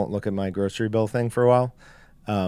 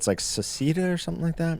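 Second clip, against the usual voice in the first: hushed whisper under the breath, slightly pitched up; 7 semitones higher, 5 dB quieter than usual. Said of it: "Do you have to whisper when you say it?".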